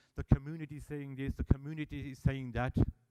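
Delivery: ordinary talk, nothing marked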